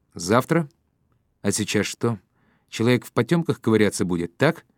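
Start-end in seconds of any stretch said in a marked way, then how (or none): none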